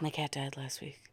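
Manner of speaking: dead-serious, very quiet, flat deadpan. Showing how they read a line from a play about clowns, deadpan. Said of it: "Just deadpan".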